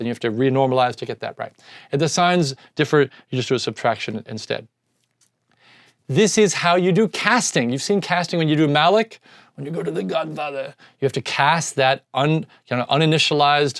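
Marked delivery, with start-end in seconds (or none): 9.5-10.7 quiet, hushed put-on voice. Explaining casting in code, the speaker breaks into a Marlon Brando voice. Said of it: "(MARLON BRANDO VOICE)".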